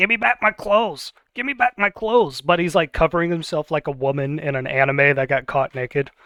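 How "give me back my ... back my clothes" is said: high-pitched little imp voice. Voicing the imp Inchi, demanding his clothes back: Inchi the imp voice. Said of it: "and the imp says".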